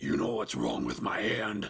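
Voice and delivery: very deep, rough, creaky demonic tone. Narrator voices the thing behind the door replying to the narrator, in a demonic voice. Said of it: "it said in a demonic tone".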